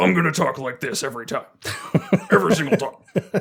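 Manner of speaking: over-the-top put-on fantasy orc voice. A player tells the group how they'll play a half-orc, in a half-orc voice. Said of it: "if I'm going to play a half orc".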